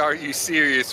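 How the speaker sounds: usual speaking voice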